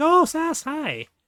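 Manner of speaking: excited high voice.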